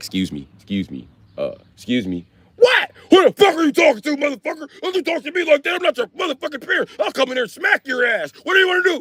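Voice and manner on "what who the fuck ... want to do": mock furious tirade, pitched way up, shouting. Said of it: "you act like D M X all the time".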